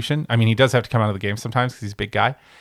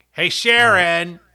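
raspy, nasal Northeastern street vendor voice; 7 semitones higher, 4 dB louder than usual. Demonstrating how you think they sound, like a really raspy, nasally Northeastern guy at a hot dog stand. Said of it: "really raspy, nasally Northeastern guy at like a hot dog stand".

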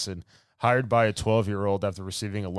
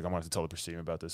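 put-on serious voice, much lower and quieter; 3 semitones lower, 10 dB quieter than usual. Retelling a scene where Jason Isaacs hears of a coup, imitating him all serious. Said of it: "he's like all serious".

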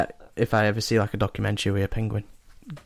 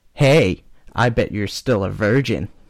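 acted American child voice. Voicing a kid character on a co-host's request, an american kid voice. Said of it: "Oh, I went American".

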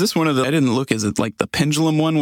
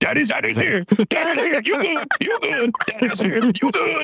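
screaming at a much higher pitch; 13 semitones higher than usual. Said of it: "He just screams that at her".

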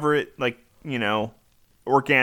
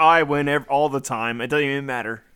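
ordinary talk, nothing marked

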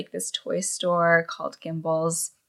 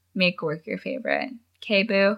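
usual speaking voice

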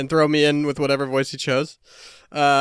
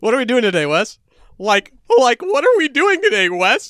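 high, swooping, swingy cartoon character voice; 8 semitones higher, 4 dB louder than usual. Doing cartoon voices, the speaker asks Wes a question as Shaggy. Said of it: "impersonating voices of animated characters".

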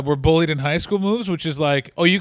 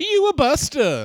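higher woman's voice; 9 semitones higher than usual. Retelling a street fight where a lady calls out, imitating a lady's voice. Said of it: "you just hear a lady's voice just go".

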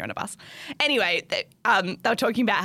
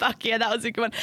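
usual speaking voice

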